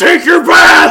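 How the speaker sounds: very loud, rough, gravelly monster bellow. Voicing a golem who throws a player into the pool: golem yelling. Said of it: "And he yells".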